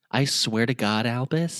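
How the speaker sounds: put-on whispering voice. Voicing Minerva whispering into Albus's ear: whispering as Minerva McGonagall. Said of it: "Minerva A S M R".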